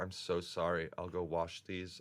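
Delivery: slow, near-tearful voice, close to tears. Retelling her apology after waking in a wet bed: imitating someone almost crying. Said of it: "she was almost crying".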